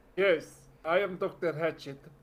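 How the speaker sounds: put-on Transylvanian accent. Retelling a doctor introducing himself, Doctor Hatchet's Transylvanian voice. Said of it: "Transylvania voice".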